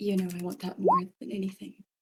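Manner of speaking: said under breath. Voicing a character as another character disappears: said under her breath. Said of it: "Florence says under her breath".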